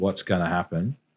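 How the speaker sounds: ordinary delivery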